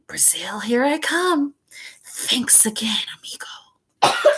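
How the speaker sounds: low, soft, sibilant hissing snake voice. Narrator reads the escaping snake's parting words in a low hissing voice. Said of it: "a low hissing voice said".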